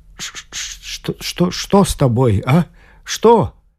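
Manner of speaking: slow, halting stutter repeating each word. A husband, seeing his wife crying, asks what is wrong, stammering. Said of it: "заикаясь".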